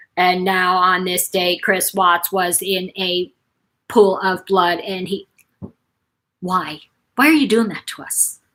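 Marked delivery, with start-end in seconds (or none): 0.1-5.2 mechanical, robotic narrator voice, flat and slow. Mocking the robotic voices narrating those videos, robotic narrator voice. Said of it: "those robotic voices that go".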